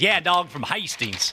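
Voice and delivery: put-on, drawled Southern accent. Host retelling what a man from the South said, imitating his Southern accent. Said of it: "He goes".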